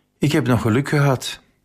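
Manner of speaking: out of breath, loud sigh. A traveler squeezes into the train compartment just before departure, out of breath, sighing loudly. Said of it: "luidop zuchtend zegt hij".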